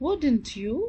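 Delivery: tune rises at the end on "you". Teaching question tags, rising at the end on you. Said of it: "my voice went slightly up. ... This is called rising intonation".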